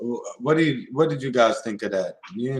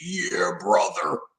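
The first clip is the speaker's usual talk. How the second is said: breathy, whispered, hushed pro-wrestler-style voice. Showing how the Alex Jones voice is built: Hulk Hogan voice. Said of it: "that's where you get your Alex Jones from".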